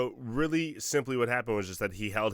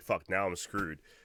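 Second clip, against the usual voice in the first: normal talking voice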